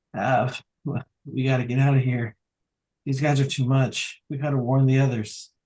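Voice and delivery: very meek, timid calling-out voice. Narrating a character who rises with her sword's support and cries out to Av: very meek voice. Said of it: "in a very meek voice".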